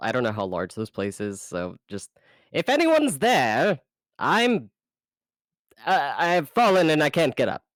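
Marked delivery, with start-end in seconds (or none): 2.5-7.6 raised, high yell in character. Trapped and calling out for anyone to hear: yelling in character. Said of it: "I'm just gonna yell".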